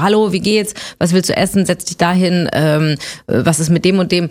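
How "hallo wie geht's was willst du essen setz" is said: ordinary delivery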